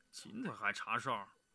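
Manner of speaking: half-asleep mumbling, very hushed and quiet. Woken to check the sentries, the half-asleep monk gets up, sleepy mumble. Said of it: "睡得迷迷糊糊的和尚爬起来嘟囔着".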